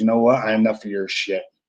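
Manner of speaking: level, steady, quiet, calm, menacing voice. Retelling a wrestling match, quoting the partner: imitating her calm threat. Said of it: "she gets real calm".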